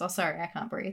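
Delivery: ordinary talk, nothing marked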